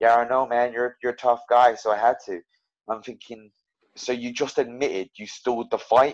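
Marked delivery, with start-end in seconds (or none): 0.0-2.4 casual put-on Canadian accent. Retelling the other fighter's reply after the fight, in a put-on Canadian accent. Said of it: "He goes in his Canadian accent".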